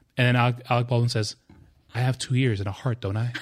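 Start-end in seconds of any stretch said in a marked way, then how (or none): 1.9-3.3 put-on deadpan, flat delivery. Recalling a sitcom episode to a friend: Alec Baldwin deadpan delivery, mimicked. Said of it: "the way he says it's so deadpan".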